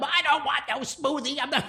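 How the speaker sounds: play-acted, loud, angry screaming. Retelling a street scene watched from the front stoop: imitating someone screaming. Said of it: "she starts screaming at him".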